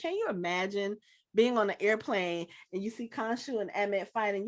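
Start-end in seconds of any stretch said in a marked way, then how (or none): none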